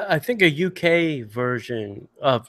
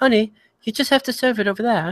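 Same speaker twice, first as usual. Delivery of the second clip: poor, fake, pitched-up British accent; 6 semitones higher than usual. Imitating his father talking to the restaurant wait staff, in a bad British accent. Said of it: "I don't know why I'm doing a British accent".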